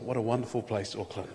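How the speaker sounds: quiet, low voice.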